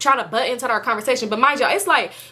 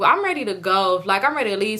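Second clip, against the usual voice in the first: ordinary talk, nothing marked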